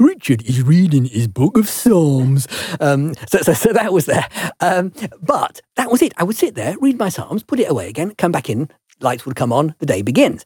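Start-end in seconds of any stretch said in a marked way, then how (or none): 0.0-2.5 slow TV commentator announcer voiceover. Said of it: "that commentating voice goes".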